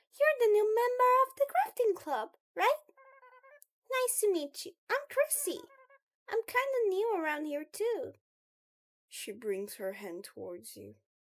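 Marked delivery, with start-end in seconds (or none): 0.1-8.1 very high, loud, raised creepy voice. Narrator voices Chrissy, a creeper greeting the new club member, very high-pitched. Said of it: "very high pitched voice".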